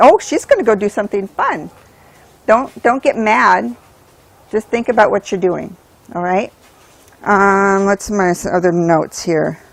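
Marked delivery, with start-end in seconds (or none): 0.0-1.7 eager, excited, swooping sing-song voice. Voicing what the dog should think when called: imitating the dog's excited thought. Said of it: "make it exciting that they wanna engage".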